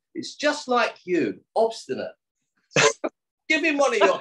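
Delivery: very high, swooping, angry rant. Retelling her scolding the stubborn yogi: imitating someone ranting angrily. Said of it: "sort of going off on one".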